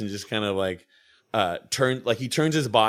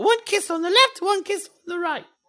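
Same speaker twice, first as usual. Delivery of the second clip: fake British accent, pitched very high. Speaker retells what she says while showing a kiss thing, in a put-on british accent. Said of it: "wait, she's not British".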